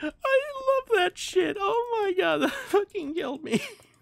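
very high, words broken up by laughter. Telling about bullying another player together, laughing while talking. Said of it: "I'm not choking, I'm laughing".

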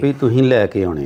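ordinary delivery

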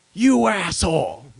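mock, very loud, high, furious angry shout. Retelling a friend's reaction on a phone call: imitating a friend's angry outburst. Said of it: "something's got him mad".

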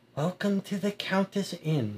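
quiet, hushed, soft-spoken voice. A woman at a table welcomes a newcomer to the inn: hushed tone. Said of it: "she says in a hushed tone".

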